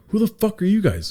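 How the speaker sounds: forceful, high-pitched delivery.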